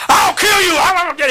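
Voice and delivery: very high, loud, roaring demon voice. Retelling a demon answering the command to leave: imitating a demon speaking in a man's voice. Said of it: "It just came into a man's voice".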